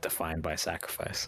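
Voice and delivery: plain, unsolemn muttering to oneself. Saluting the standing ghosts in character: said under the breath. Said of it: "under my breath".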